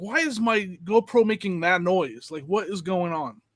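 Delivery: ordinary delivery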